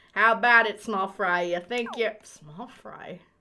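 plain

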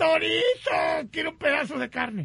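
high-pitched, slow, drawn-out suffering yell.

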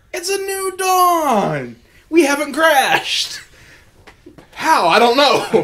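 very high, slow cat-person voice, dawn drawn out. A cat-person character on the ship speaks up: cat-person character voice. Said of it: "but he is a cat person".

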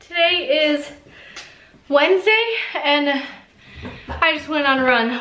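breathless, winded voice. Just back from a run and speaking while still out of breath. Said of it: "why I'm out of breath".

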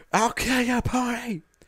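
very high, screeching monster voice. Reading a story aloud, the narrator gives the stuck spider's threat to the pony, screeching. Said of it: "He screeched".

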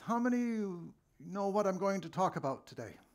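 very loud, high-pitched calling voice. Telling a story, quoting a man addressing the town mosque from the podium, in a very loud voice. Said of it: "said in a very loud voice".

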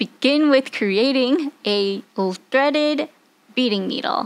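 very slow, halting, careful, word-by-word pace. Giving the first step of a beading project, saying it slowly. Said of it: "I'm saying this slowly because it is a tongue twister".

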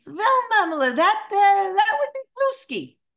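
very high, loud, shrill, bad Eastern European accent. Speaker retelling asking Regina for her signature recipe, worst Eastern European accent. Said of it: "the absolute worst Eastern European accent".

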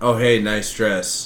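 slow, sort of sarcastic praising tone. An example of complimenting someone's dress, delivered sort of sarcastic. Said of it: "So it sounds sort of sarcastic".

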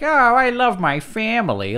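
very high, loud, swooping, goofy cartoon dad voice. Critiquing a show's jokes, mimicking their lines, in a Peter Griffin voice. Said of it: "that sounded more like how South Park did Peter Griffin's voice".

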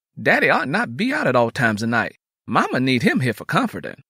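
ordinary talk

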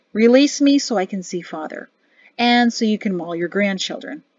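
ordinary delivery

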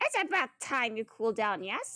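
very low-pitched cartoon voice. Voicing one character's line, doing a Monokuma voice. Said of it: "I'm kind of doing a Monokuma voice for him".

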